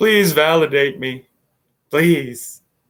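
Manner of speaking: wry, sarcastic, pretend pleading tone. With still nothing in the chat, begging viewers to subscribe, sarcastic mock pleading. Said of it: "I'm being sarcastic, obviously".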